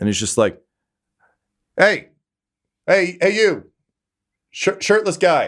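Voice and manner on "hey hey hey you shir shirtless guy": very high-pitched, carrying yell. Voicing a rider greeting a shirtless guy in the crowd: yelling across a crowd. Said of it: "he actually yells, like, across the crowd".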